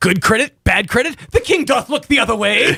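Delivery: hard, high action-ad voice with medieval-style phrasing. Trading lines in a mock medieval ad: hard, high action voice, medieval speak. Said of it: "Hard, high action voice, but medieval speak".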